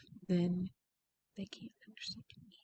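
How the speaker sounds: very soft, barely-there, hushed quiet voice. Showing how speaking too quietly into a microphone sounds: speaking very quietly. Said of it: "if you speak like this very quietly".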